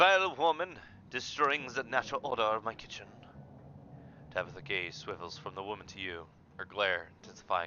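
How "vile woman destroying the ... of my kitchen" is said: put-on French accent slipping in. Voicing a character glaring at a woman tidying the kitchen, in an accidental french accent. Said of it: "I was doing a French accent on on accident".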